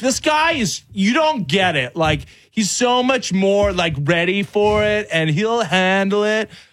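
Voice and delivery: bad put-on New York accent. Retelling what Yankee guests said during the series, in a bad New York accent. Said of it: "Why is your New York accent California?".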